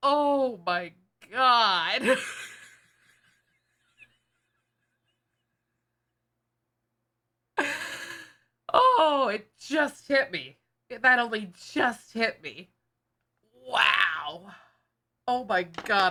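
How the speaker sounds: in tears, crying, tearful voice. Speaker realizes something only after saying it out loud: crying. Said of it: "I'm crying".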